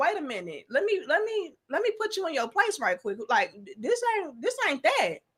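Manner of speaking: firm, calm, non-combative tone. Retelling how Eric answered during an argument: imitating Eric putting someone in their place. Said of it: "It was very much so like".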